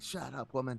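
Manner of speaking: plain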